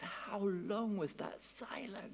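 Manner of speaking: slow, soft whisper.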